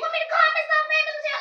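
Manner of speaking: high, fast, loud delivery.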